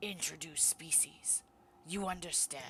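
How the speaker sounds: words rasped out haltingly. Narrator voicing a talking horror addressing the listener, in a rasping Noctilucent voice. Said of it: "rasping voice".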